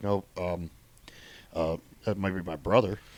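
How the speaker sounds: very low, soft, fake deep voice. Retelling a man's reply, imitating him talking in a put-on deeper voice. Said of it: "He he was talking in a deeper voice".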